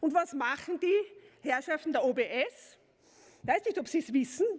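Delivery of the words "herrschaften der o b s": ordinary talk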